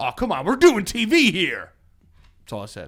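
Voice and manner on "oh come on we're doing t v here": playful, high, in-character shouting yell. Retelling an in-character line to a kid during filming: retelling own in-character yell. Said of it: "why you, uh, yelling at my son?".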